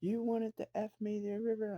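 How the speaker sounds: acted very high, shrill, top-of-the-lungs shriek. Retelling a quarrel where one person screamed: imitating a scream. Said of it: "Amber screams at the top of her lungs".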